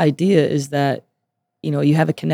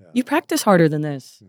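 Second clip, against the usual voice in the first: slightly upset tone; 2 semitones higher than usual. Showing how a halftime locker-room speech to the team would sound: a little more upset. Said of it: "are you upset at this?".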